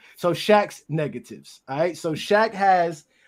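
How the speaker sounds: slowed down. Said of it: "let me slow down".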